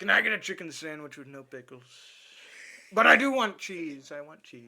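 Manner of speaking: booming, very loud, belted-out put-on voice. Retelling a fast food order he was asked to do: Trump impression.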